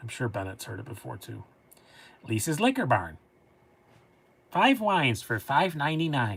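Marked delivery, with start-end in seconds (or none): 2.3-6.4 put-on Upper Michigan accent. Imitating a local radio ad: Upper Peninsula Michigan accent. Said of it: "they all sound like they're from Michigan".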